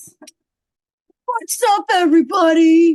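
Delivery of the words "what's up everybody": high, loud, hyped-up vlogger shout. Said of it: "some people think vlogging is".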